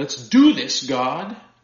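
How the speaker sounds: very loud, snarling shout. Speaker acting out a shout in a wrestling singlet for listeners: snarly shout. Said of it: "shout out in a snarly voice".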